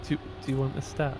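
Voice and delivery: whispered, soft, timid, small voice. Recalling how a stat was asked for so quietly: mock-timid. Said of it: "It was really like very timid".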